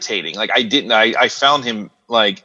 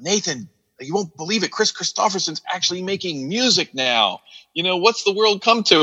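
excited, worked up, higher pitch; 8 semitones higher, 3 dB quieter than usual. Retelling a friend's excited email about surprising news: imitating Chris, all excited. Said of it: "He's all excited".

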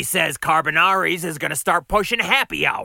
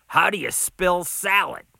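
plain reading voice

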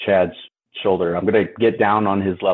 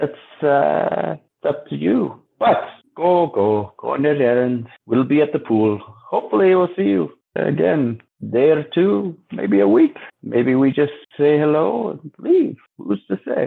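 bad fake Ukrainian accent, higher pitch; 7 semitones higher than usual. Voicing a Vistani character in the game: terrible put-on Ukrainian accent. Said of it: "my terrible accent".

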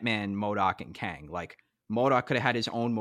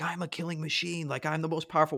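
put-on high, out-of-control, unhinged, egotistical screaming; 7 semitones higher than usual. Retelling how the villain screamed at the heroes: imitating MODOK screaming. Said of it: "was screaming at them".

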